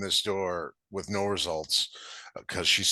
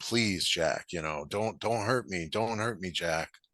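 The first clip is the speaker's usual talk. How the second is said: put-on tearful crying, quieter and faster; 4 dB quieter than usual. Retelling a story where he follows her up the stairs, imitating someone crying. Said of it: "she's crying".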